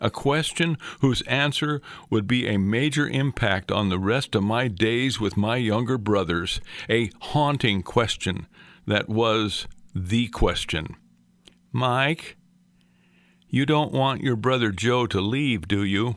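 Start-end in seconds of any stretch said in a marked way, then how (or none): 11.7-16.2 mock very soft voice, even softer. Retelling a mother's important question to her son: imitating an even softer voice. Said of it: "In a still softer voice".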